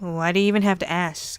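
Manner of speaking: ordinary delivery, nothing marked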